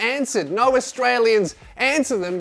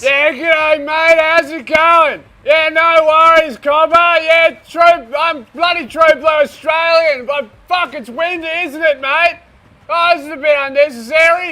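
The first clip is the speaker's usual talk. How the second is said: over-the-top Australian accent, straining as if against wind; 6 semitones higher, 8 dB louder than usual. Showing how Australians talk into wind: exaggerated Australian accent, as if into gale force winds. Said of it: "We all talk like we're walking directly into gale force winds".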